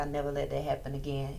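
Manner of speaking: ordinary delivery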